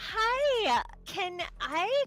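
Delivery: slightly flirty tone. Playing a character who invites someone for a drink: slightly flirty. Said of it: "slightly flirt with him".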